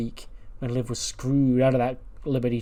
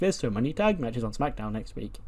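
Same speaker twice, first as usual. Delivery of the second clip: ordinary talk, nothing marked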